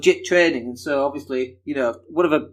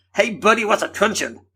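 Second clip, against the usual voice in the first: pitched-up fake American accent; 6 semitones higher than usual. Acting out people questioning the speaker, in a put-on American accent. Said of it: "that's my American accent".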